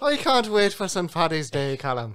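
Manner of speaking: fake Irish accent. Joking with friends about Saint Patrick's Day: put-on Irish accent. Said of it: "I spoke in an Irish accent".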